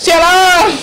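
high, loud calling yell.

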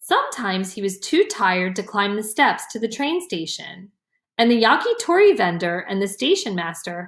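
ordinary delivery

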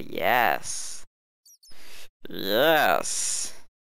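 spooky, creepy put-on haunted-house voice. While building a haunted mansion, say it in a creepy voice. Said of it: "Creepy voice".

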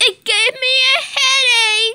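very high, shrill, piercing shriek. In a pretend game, another player tells this one to stop screaming. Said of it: "Stop screaming".

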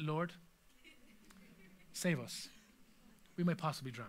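mock calm, low pitch, soft.

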